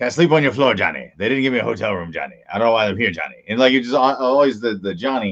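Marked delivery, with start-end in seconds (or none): 0.0-3.4 heavy-set big man voice. Imitating a heavy-set friend calling his name at conventions: imitating a heavy-set friend, Conrad. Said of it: "he was like".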